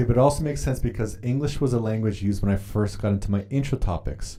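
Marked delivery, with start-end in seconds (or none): none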